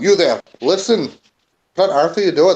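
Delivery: yelling loudly. In the game, the player's character yells to the goblin: yelling at the goblin. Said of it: "I yelled to the goblin".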